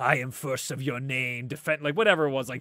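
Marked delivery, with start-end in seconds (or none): 0.0-1.8 put-on demonic voice. Recalling a game's special weapons: Klaus demonic voice. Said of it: "hearing Klaus talk to you in that demonic voice".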